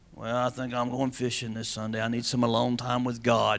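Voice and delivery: low, soft, mocking voice.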